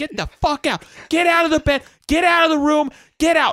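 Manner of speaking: very high, shrill, blood-curdling furious scream. Retelling the mom yelling at dad in bed, a blood-curdling scream. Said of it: "I woke up to this blood-curdling scream".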